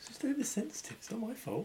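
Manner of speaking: muttered under breath. A player's character speaking after the kidnapper walks off, muttered under breath. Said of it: "I said under my breath".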